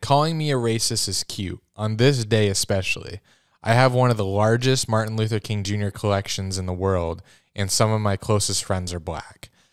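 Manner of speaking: plain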